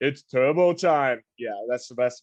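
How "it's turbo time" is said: big, loud action-hero catchphrase delivery, belted out. Counting down favorite Christmas movies, doing an Arnold impression. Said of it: "that's the best impression I could do".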